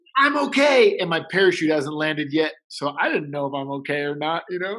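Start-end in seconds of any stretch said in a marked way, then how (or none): 0.1-0.9 very high, loud shouted call. Retelling landing on a roof after a wingsuit jump: imitating own yell. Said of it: "and I yell".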